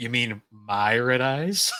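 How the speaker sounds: acted casual, unbothered tone. Retelling a scene where Joey answers a dinosaur duelist: imitating Joey nonchalantly. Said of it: "so nonchalant about it".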